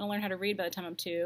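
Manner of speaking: ordinary delivery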